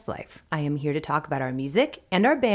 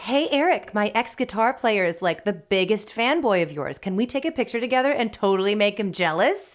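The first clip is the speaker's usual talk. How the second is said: ordinary delivery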